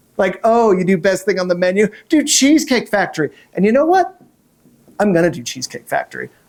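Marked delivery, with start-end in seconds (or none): 0.4-3.3 put-on sarcastic, mocking tone. Retelling what people say at comedy shows: imitating a sarcastic request. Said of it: "gets requested at all of my comedy shows sarcastically".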